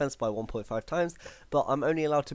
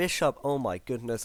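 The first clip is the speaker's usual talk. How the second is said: plain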